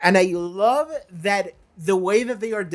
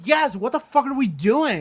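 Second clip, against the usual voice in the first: put-on fed-up, emphatic, exasperated, frustrated outburst; 4 semitones higher than usual. Retelling own reaction to a scene on a show: imitating own frustrated reaction. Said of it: "you can tell that I was so frustrated".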